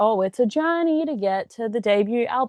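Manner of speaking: mock knowing, sarcastic tone. Quoting what every artist says about a debut album: imitating artists, sounding sarcastic. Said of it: "that sounded really sarcastic".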